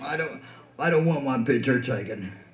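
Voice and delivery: low, gruff, grumbling delivery. Remembering a friend at a memorial, imitating a gruff voice. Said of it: "he's always talking real gruff".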